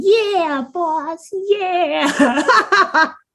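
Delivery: very high-pitched 1920s mobster henchman voice. Voicing the other toes answering the boss: 1920s gangster voice. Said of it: "To which all the other toes respond".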